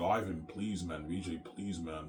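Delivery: play-acted, soft, slow, tearful, close to tears. Retelling how some of them pleaded with Ivan, imitating people crying. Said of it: "Like they're crying".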